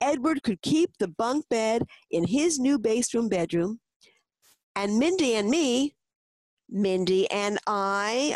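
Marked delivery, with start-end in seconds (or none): 6.7-8.3 slow, pointed stress on "I". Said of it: "a grandpa interjected".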